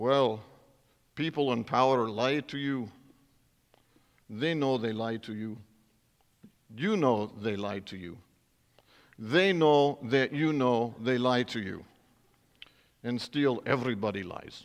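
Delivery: put-on Russian accent. Speaker retells what a man said, quoting him in a russian accent. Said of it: "I have to use a Russian accent to do this".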